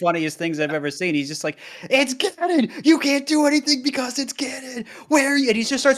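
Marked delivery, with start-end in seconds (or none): 1.9-5.5 shrill, very high-pitched screaming rant. Retelling a clip where a player screamed that Ganon is terrifying: imitating Taupe screaming. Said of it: "screaming about how Ganon is terrifying".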